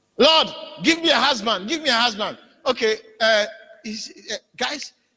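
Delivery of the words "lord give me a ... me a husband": begging, pleading cry. Acting out a person praying for a husband: imitating someone crying out to god. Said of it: "she's crying for a husband".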